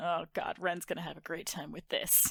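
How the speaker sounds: muttered under the breath. Voicing a character turning from the mirror: muttered under the breath. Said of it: "I mutter under my breath".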